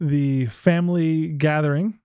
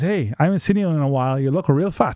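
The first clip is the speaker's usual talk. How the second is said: ordinary delivery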